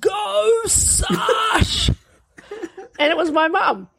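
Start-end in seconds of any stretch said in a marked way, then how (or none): 0.0-1.9 high-pitched fishmonger-style calling-out yell. Retelling the speaker's mum yelling from the parents' seats at a race; retelling a fishmonger-like yell. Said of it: "she yells".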